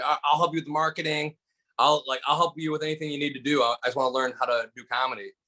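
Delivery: plain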